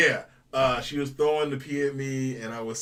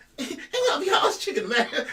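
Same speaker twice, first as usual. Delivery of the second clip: very high, swooping put-on character voice. Recalling a past persona, the speaker gives its greeting in a high-pitched character voice. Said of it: "same high pitched voice".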